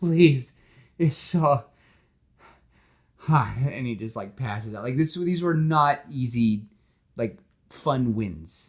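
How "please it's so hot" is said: weepy, sobbing, high, drawn-out crying. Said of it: "he's, like, crying".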